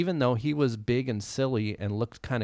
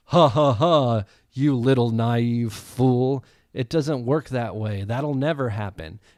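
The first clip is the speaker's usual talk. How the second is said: mock-condescending tone; 7 dB louder than usual. Retelling what he said to his wife, mock-condescending. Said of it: "in a condescending voice".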